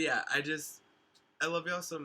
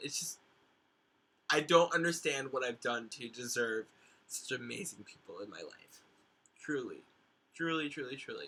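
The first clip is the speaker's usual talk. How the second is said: near tears, voice on the edge of crying; 3 semitones lower than usual. Thanking the people in their life at season's end, on the verge of tears. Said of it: "on the verge of of tears here".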